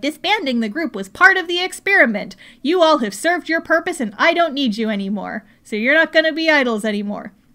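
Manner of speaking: robotic, machine-like, auto-tuned voice. Retelling what the wall told the idol group, in a robotic voice. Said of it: "Very like ro- like kind of robotic".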